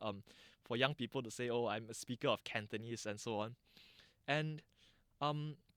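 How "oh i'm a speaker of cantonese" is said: plain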